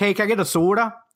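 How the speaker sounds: heavy put-on Minnesota accent. Retelling asking for a soda in Atlanta, in a put-on Fargo accent. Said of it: "I did that in Atlanta this last time".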